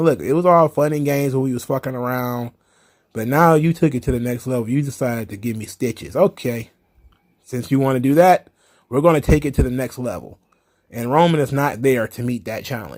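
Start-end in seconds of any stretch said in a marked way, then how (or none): none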